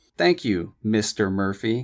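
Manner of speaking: icy, businesslike, coldest professional tone. A woman answers a man's compliment, in a cold professional tone. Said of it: "she said in her coldest professional tone".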